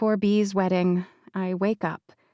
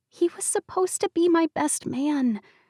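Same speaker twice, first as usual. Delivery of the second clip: stage whisper, pitched up; 8 semitones higher than usual. B speaks to the narrator, whispering. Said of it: "she whispers".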